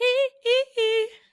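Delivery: high-pitched, loud hee-hee. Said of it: "He was just doing the".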